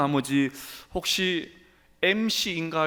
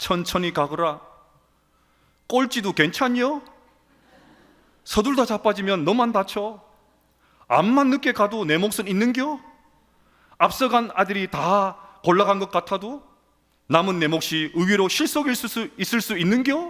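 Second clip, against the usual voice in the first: put-on Jeolla regional Korean accent; 3 semitones higher, 4 dB louder than usual. Speaker retelling a grandmother's words comforting her grandson, in a failed Jeolla dialect attempt. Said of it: "전라도 사투리 잘 안 되네요".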